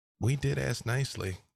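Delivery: whispering very quietly. Player character standing by an injured creature, whispering very quietly in its ear. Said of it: "I just whisper very quietly in its ear".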